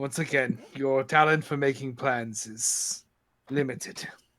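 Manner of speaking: put-on low, vague, mixed pan-European accent. Teasing the team's captain about his plans, in a European Union accent. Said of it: "this is the European Union accent".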